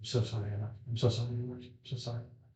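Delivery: very quiet, barely audible whisper under the breath. Voicing a tripping companion curled on the floor: whispering to herself. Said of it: "you can very distinctly hear her whispering to herself".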